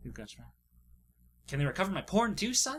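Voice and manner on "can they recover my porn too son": put-on Atlantic accent in a high voice. Acting out a father asking his son about recovering a hard drive, Atlantic accent. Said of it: "what is that Atla- Atlantic accent?".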